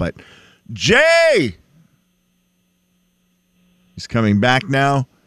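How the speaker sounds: angry, swooping cry with the name stretched out. The host announces that Jay is coming back, saying it angrily. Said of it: "I don't know why you have to say it so angrily".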